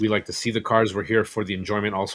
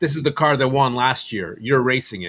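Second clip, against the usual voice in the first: put-on loud, projected shouting; 3 semitones higher, 3 dB louder than usual. Retelling how a sponsor announced the car in front of everybody: imitating someone yelling. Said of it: "and he yells it in front of everybody".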